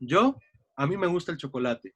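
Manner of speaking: short, clear pause after the word yo. Showing unwritten cues in spoken sentences, with a pause after 'yo'. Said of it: "hay un cambio en la entonación. Hay una pausa".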